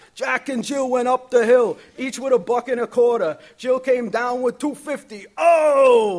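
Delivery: put-on heavy, loud New York accent, "oh" dragged out. Kids repeat a comedian's nursery rhymes from cassette tapes, heavy New York accent, imitating Andrew Dice Clay. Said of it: "in their heaviest versions of New York accents".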